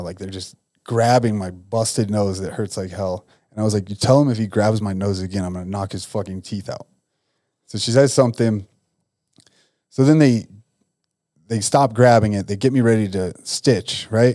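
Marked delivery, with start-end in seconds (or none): none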